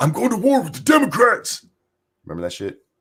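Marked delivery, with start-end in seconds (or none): 0.0-1.7 very high, shrill, boastful wrestling-promo yell. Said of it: "I'm making him sound like a wrestler".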